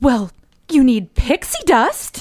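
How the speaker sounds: sweetest sugar-sweet voice, slow and drawn out. The speaker retells the fairy godmother's reply on hearing their plans: sweet Fairy Godmother voice. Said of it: "in the sweetest fairy godmother voice".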